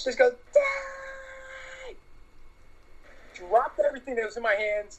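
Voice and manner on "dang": shrill, very high, top-of-lungs scream, drawn-out "dang". Retelling how a guy nearby suddenly screamed at the top of his lungs, retelling a shrill scream. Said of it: "scream at the top of his lungs as shrilly as possible".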